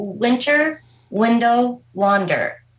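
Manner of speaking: slow, deliberate, each word carefully spaced out. A presenter announces a sponsored event with a tongue-twister name, saying it not fast. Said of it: "I'm going to say this not fast".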